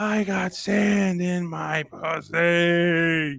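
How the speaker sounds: very slow, high scream, "pussy" drawn out. Retelling a bad date, quoting the girl: imitating a woman screaming. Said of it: "she's screaming at the top of her fucking".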